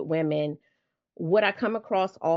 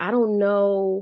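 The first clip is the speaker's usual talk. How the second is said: small, shrunken, self-doubting tone; 4 semitones higher, 4 dB louder than usual. Imitating clients met through a podcast: imitating a shrunken voice. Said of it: "talking in that shrunken voice".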